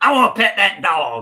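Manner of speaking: put-on loud, strongly southern young girl voice. Describing a video of a little girl who sees a bear, really southern young girl voice. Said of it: "really southern, like young girl".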